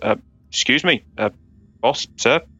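cough first, then hesitant, tentative speech. Voicing a character disguised as the guard Benton: playing Benton the guard. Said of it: "sort of coughs and goes".

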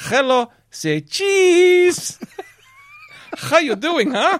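put-on South American accent, very high and loud. Recalling a visiting cameraman, doing Jose's South American accent. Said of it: "It's my South American accent".

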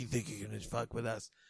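put-on menacing whisper. Retelling a movie scene where one man threatens another: imitating a whispered threat. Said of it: "whispers a threat to him".

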